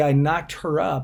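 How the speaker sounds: ordinary delivery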